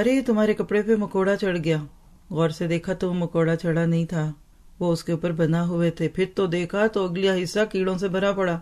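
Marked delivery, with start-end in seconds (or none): none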